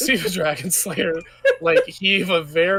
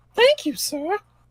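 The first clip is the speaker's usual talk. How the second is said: falsetto voice, pitched very high; 12 semitones higher than usual. Voicing the ones he set down saying thanks, in falsetto voice. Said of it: "decided to do a falsetto for that".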